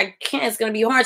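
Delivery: ordinary delivery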